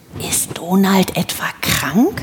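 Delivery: slow, puzzled, wondering whisper. Seeing a horse's head droop over the stall door, one asks in a puzzled whisper. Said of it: "flüsterte Keks verwundert".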